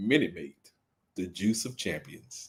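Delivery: very low, deep, fake commercial announcer voice. Joking about a juice brand not sponsoring the show: mock sponsor ad voice. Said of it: "I can be like".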